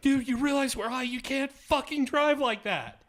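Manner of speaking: put-on very high, shrill, loud, panicked screaming. Retelling yelling at the driver from the back seat: imitating screaming.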